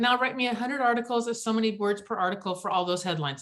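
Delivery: normal talking voice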